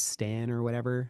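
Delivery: ordinary delivery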